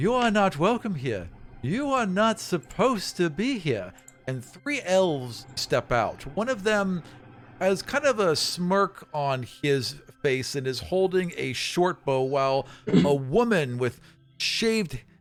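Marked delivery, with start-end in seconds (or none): 0.0-3.9 high, swooping elf voice calling out. Narrating a scene where someone shouts after an arrow flies past: elf shouting. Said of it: "someone shouts".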